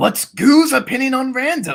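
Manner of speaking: rough, gruff voice, very loud and very high. Demonstrating a voice by reading a viewer's comment aloud, gruff voice. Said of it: "But if I take out the gruff".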